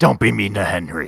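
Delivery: loud, growled, scolding tone. Speaking as their character, the speaker growls at the other guy: growling. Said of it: "I growl at the other guy".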